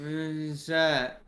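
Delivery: put-on slow, dazed stoner drawl. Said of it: "He's just like".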